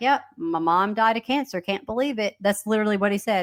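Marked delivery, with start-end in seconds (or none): 0.0-2.4 casual, unbothered, nonchalant delivery. Retelling an interview answer about a mother's death: imitating a nonchalant tone. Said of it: "he was very nonchalant".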